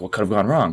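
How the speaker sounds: usual speaking voice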